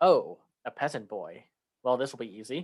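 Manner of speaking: play-acted, sarcastic, cynical cartoon dragon voice, swooping pitch. Describing an animated dragon's lines: imitating a sarcastic cynical dragon. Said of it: "the dragon seems a lot more sarcastic and cynical".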